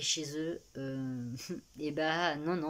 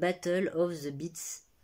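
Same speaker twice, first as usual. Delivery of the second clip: put-on English pronunciation; 4 dB louder than usual. French speaker says an English title, English accent. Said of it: "vous allez avoir mon magnifique euh, accent anglais".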